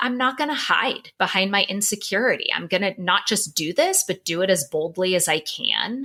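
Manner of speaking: normal talking voice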